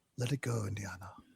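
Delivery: grave, heavy, somber, solemn line reading. Retelling a movie scene, quoting the father: somber Sean Connery tone. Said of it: "somber Sean Connery tone".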